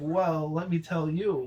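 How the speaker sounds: normal talking voice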